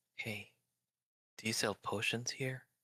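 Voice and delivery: hushed, quiet whisper. Player speaking as Eggy to the barkeep, whispering to the barkeep. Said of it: "Eggy's gonna whisper at the barkeep".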